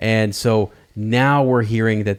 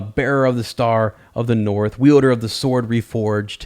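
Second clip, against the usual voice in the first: ordinary talk, nothing marked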